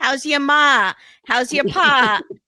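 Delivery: put-on Italian accent. Retelling a scene where Joey's friend Rob calls: imitating Rob's accent. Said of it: "Kimberly's gonna have a field day with this guy's accent".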